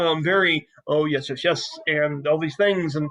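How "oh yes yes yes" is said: eccentric, oddball, rambling manner. Voicing an eccentric character talking to Dahon: Jeff Goldblum voice. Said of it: "talking as only Jeff Goldblum would accomplish".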